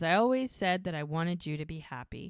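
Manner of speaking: ordinary talk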